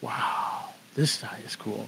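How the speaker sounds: hushed aside.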